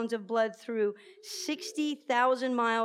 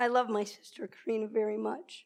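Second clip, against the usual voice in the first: heartfelt, emotional, moved delivery. Speaking about the speaker's sister karina, getting emotional. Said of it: "the reason I'm getting emotional".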